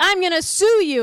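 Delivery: high, loud, mock-menacing tone.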